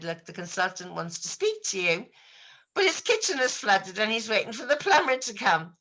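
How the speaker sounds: ordinary delivery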